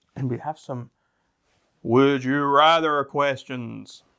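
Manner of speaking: put-on spooky, eerie voice. Two co-hosts move on from story time; one introduces the next part in a spooky voice. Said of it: "That was my spooky voice".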